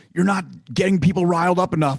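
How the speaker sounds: put-on half-hearted yell. Retelling what producers told him before shows: imitating producers yelling. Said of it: "his producers would be yelling at him".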